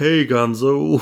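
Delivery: flat, lifeless delivery with no character. Mocking the new voice actor's bad Kermit: imitating a flat, too-deep Kermit. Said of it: "he wasn't putting any, like, thing on it".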